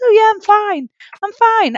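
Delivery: bright, very high, put-on, fake-cheerful breezy tone. Retelling pretending to the masseuse that all was fine: imitating pretending to be fine. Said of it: "I'm pretending to her".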